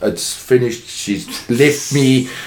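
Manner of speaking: ordinary talk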